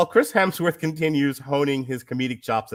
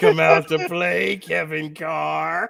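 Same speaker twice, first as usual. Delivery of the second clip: eerie, creepy calling-out voice; 3 semitones higher than usual. During a review show, creepily calling a reviewer to come out and play. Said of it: "my creepy calling out of".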